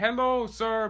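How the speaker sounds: pushy, high, loud, pleading fundraiser voice.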